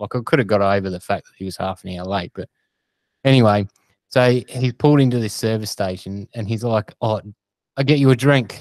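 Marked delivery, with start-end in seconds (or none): 7.0-8.6 faint, light, put-on Indian accent. Retelling what the driver said at a service station: slight Indian accent. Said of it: "you used a slight accent there".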